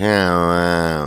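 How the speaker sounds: mock very slow drawl. Recalling a friend's brother they interviewed, imitating the slowest drawl. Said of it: "he had the slowest drawl".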